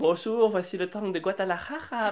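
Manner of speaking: put-on Spanish accent on French words. Speaker jokes in a conversation, Spanish accent. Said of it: "un accent espagnol".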